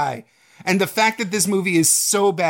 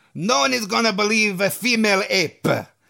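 put-on croaked delivery with an Italian accent; 3 semitones higher than usual. Replying to a writer introducing Lady Kong, as Dino De Laurentiis, like a magical Italian frog. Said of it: "He talks like a magical Italian frog".

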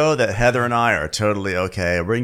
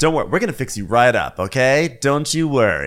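put-on soothing, reassuring, made-for-TV tone. Imitating a man comforting someone crying, imitating soothing made-for-TV reassurance. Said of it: "Like that was the tone. It was very much like a made for TV. Everything's going to be okay. Kind of voice".

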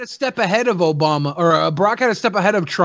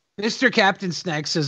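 ordinary delivery

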